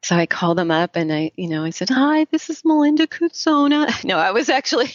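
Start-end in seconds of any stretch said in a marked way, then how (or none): 1.9-4.0 put-on tiny, very high, slow three-year-old voice. Retelling a nervous phone call to a gallery, in a little three-year-old voice. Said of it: "The little three-year-old voice that comes".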